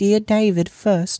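ordinary delivery, nothing marked

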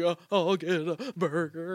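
put-on sniffly voice. Recounting going up to order a burger while cold and wet: retelling a sniffle. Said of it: "like sniffling".

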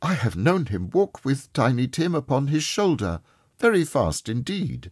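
even, bright, a touch high, wavering once. A mother answers her son Peter: steady, cheerful, faltering once.

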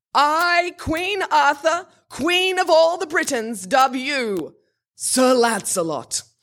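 grand, pompous, self-important royal proclamation voice. Narrating a story as the queen dubs a knight, Queen Arthur's important-sounding voice. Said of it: "said in her most important-sounding voice".

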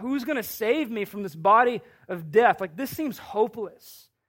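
ordinary delivery

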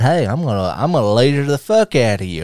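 ordinary talk, nothing marked

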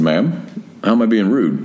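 ordinary delivery

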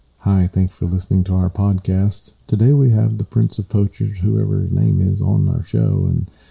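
put-on dead-level, flat, one-note host delivery. Imitating a podcast host introducing the show, imitating a monotone host. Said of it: "it was the most monotone".

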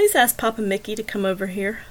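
ordinary delivery

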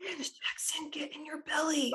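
quiet whispered voice.

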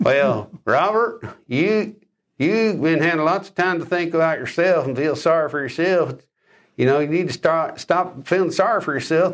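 Southern drawl, mouth barely moving. Retelling a relative from the father's family, in a Southern drawl. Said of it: "she's got this beautiful little Southern drawl".

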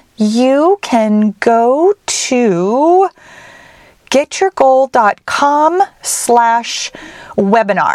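very slow, careful, deliberate dictation pace. Giving listeners a web address for a webinar replay: talking slowly. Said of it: "the reason I'm talking so slowly".

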